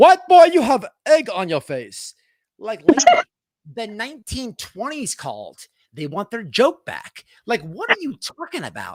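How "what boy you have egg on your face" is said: very loud, botched, bad British accent. Laughing at Lady Pearl and acting out her insult, bad UK accent imitating Lady Pearl. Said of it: "I can't do like a UK accent".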